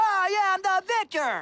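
put-on yell. Explaining a favorite wrestler's catchphrase, doing the Victor the Victor yell. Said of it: "he stands on the ropes and yells".

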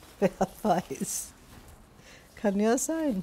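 speaking while laughing. Getting ready for her first date with a man she knows nothing about, laughing.

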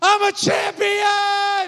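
mock shrill, very high, loud child's yell. Retelling how a child jumped off the couch and shouted: imitating a child shouting. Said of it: "and shouts".

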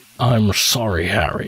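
put-on old wizard voice. Putting on a voice you love while playing a game: Michael Gambon and Sean Connery cross. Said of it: "a cross between Michael Gambon and Sean Connery".

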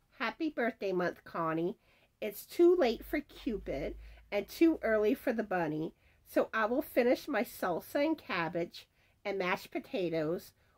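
ordinary delivery

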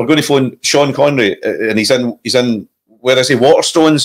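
ordinary delivery

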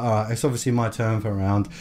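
ordinary delivery

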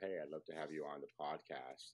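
ordinary delivery

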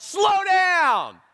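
play-acted angry shout, pitched very high. Retelling a near miss in a parking lot: retelling own angry yell. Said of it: "and I yelled".

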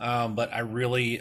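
ordinary talk

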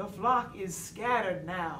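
ordinary delivery

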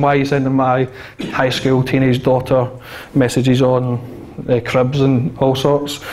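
plain

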